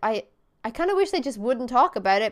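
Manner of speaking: ordinary delivery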